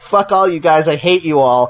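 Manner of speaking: acted cackling villain voice, laughing through words. Retelling a movie scene, imitating the Joker laughing while talking. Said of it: "laughing and being like".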